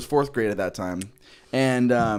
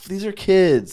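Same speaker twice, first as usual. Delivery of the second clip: put-on angry tone, higher pitch; 6 semitones higher, 3 dB louder than usual. Retelling a reaction to recruiters at school: imitating own angry past self. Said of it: "It made me, like, so angry".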